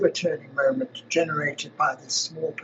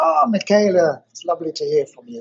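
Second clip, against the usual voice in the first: loud, sing-song, put-on Italian accent; 6 dB louder than usual. Answering a friend's phone call, the speaker greets them in a put-on Italian accent. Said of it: "I sort of put on my best Italian accent and said".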